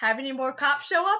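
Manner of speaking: teasing, needling, sarcastic tone. Retelling a sarcastic coworker's question at work, mock-sarcastic. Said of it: "who was like real sarcastic".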